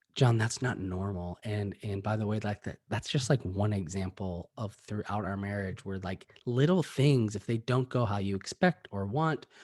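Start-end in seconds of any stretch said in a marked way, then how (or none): 0.2-1.4 mock-weary, broken voice, much lower. Recounting what his wife said to him the next day, retelling her beat-down words. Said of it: "woman in front of me who's just like beat down and".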